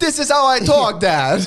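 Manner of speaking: very high-pitched, loud put-on Jamaican accent. Son answering his dad, who wants him to drop the accent, put-on Jamaican accent. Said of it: "stop doing that Jamaican accent".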